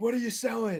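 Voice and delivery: high, livid, furious scream. Retelling a man who came to the door screaming, imitating an angry scream. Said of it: "he comes out freaking screaming at me".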